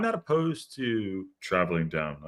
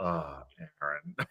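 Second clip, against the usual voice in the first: let-down, disappointed sigh, pitched higher; 8 semitones higher, 9 dB quieter than usual. Imitating a wife watching the video of a miss: mock disappointed tone. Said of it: "Such disappointment in her voice".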